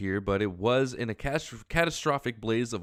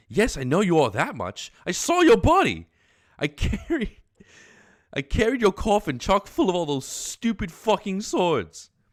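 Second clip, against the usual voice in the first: put-on loud, belted, swooping English accent; 8 semitones higher, 7 dB louder than usual. Voicing Jake in a scene with Dirk; Jake's English accent. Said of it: "Jake, I know has has to have an English accent".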